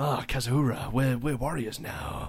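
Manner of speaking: dark, brooding character voice. Trying out a voice for a character in the script: dark brooding voice. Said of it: "What's a darker brooding voice?".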